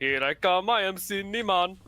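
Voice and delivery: put-on Jamaican accent. Listing Jamaican accents they can think of, putting on a Jamaican accent. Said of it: "one of the few Jamaican accents".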